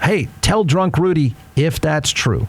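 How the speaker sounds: normal talking voice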